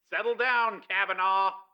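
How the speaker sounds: tinny voice, as over a speaker. A voice from a speaker below the window addresses Kavanaugh, tinny speaker voice. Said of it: "A tinny voice came from a speaker".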